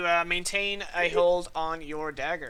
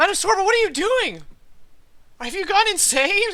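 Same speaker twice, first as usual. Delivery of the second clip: surprisingly squeaky, shrill, very loud high-pitched shout; 14 semitones higher, 8 dB louder than usual. A person who was about to shoot speaks up instead, in an unexpectedly high-pitched voice. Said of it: "with a fairly unexpectedly high pitched voice".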